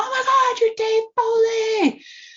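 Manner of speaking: mock very high, loud, shrieking starstruck squeal. Retelling spotting a show's cast member at work: retelling an excited scream. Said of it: "I screamed".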